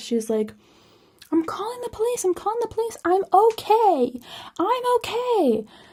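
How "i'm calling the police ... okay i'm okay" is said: mock, very high, panicked, frantic screaming. Retelling what a woman screamed downstairs, imitating Jennifer's frantic screaming. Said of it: "kind of like frantically screaming downstairs".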